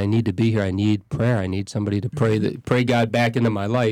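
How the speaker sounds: ordinary delivery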